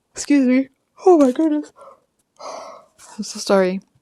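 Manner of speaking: words stretched by yawning. Speaker breaks off mid-thought to apologize, yawning. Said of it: "I apologize for yawning".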